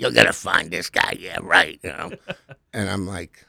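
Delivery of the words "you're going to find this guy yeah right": imitated gravelly old-school cop voice. Retelling what a retired NYPD detective told the speaker, imitating a gravelly old-school cop. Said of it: "gravelly voice, you know, old school NYPD guy".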